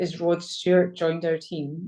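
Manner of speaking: ordinary talk, nothing marked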